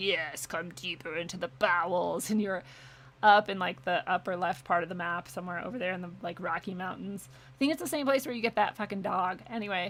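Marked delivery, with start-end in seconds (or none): 0.0-2.3 slow, deep-from-below demonic voice. Retelling a game where a voice calls you underground, demonic voice. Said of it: "this like demonic voice that was like".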